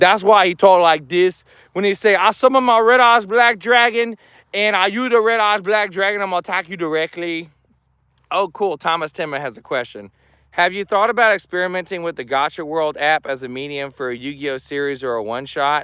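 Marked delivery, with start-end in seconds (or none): 0.0-7.5 put-on slightly high Cajun accent. Explaining that the character Jeremy Healer is a Cajun, Jeremy Healer's Cajun accent. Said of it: "I also know how to speak in the dialect".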